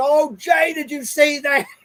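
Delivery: put-on high, frantic scream, sounding alarmed. Retelling what mother called out from the living room: imitating mother screaming. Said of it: "She's screaming in the".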